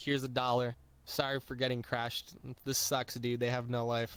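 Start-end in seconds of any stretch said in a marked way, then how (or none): none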